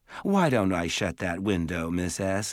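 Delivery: ordinary delivery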